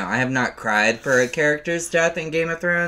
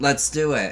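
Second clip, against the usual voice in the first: ordinary delivery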